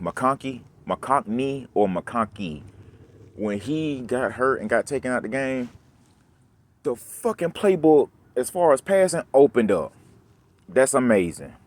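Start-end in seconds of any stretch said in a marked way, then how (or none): 10.7-11.4 sarcastic tone. Complaining that the passing playbook only opened up after an injury: sarcastic. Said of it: "I'm saying it sarcastically".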